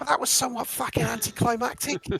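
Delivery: high, loud, croaky little goblin voice. Retelling a remark that came over the dim room: croaky little goblin voice. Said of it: "this croaky little goblin voice just come over the dim and just goes".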